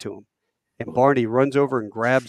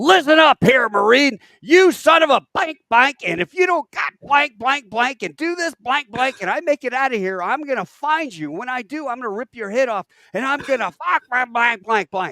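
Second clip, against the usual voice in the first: play-acted, very high, furious, raging yelling rant; 13 semitones higher, 5 dB louder than usual. Retelling a radio call when the code couldn't be authenticated: retelling Barney's tirade. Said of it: "Barney just launched in this tirade".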